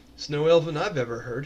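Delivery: sarcastic dry delivery. One character answers another character's strange greeting, sarcastic. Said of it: "looks at her sarcastically and goes".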